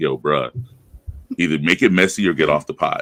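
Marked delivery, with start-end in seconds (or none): none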